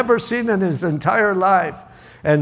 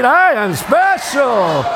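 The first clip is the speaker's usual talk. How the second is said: louder, raised, declaring voice; 4 semitones higher, 4 dB louder than usual. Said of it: "Say it louder".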